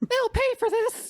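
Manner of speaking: very high, squeaky cartoon mouse voice. Friends take turns at a line, one trying it in a Mickey Mouse voice. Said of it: "I could do the Mickey Mouse voice".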